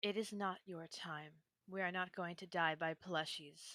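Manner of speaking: tender, hushed, soft, gentle reassuring tone. Comforting a hurt companion with a hand on her shoulder: speaking very softly. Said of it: "respond very softly with".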